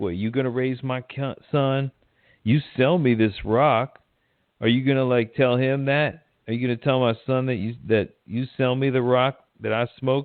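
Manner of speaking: goading, mocking, jeering taunting tone. Retelling a scene where Sharon's mother taunts Juan from a car: imitating a taunting voice. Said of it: "she's taunting him".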